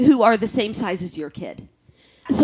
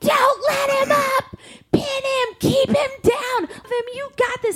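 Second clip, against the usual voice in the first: put-on acted screaming, much higher. Speaker retells cheering at a six-year-old's wrestling match, re-enacting screaming. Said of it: "So I'm screaming".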